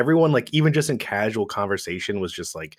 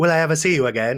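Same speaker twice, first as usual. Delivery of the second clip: put-on old-film heroine manner of speaking; 7 semitones higher, 4 dB louder than usual. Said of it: "they, like, talk like that".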